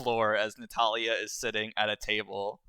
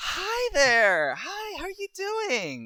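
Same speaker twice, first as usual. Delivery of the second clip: put-on very high, loud, drawn-out, sing-song Valley Girl voice; 5 dB louder than usual. Game narrator voicing Natalia greeting another character, in a Valley Girl voice. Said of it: "your female role playing voice is just Valley Girl".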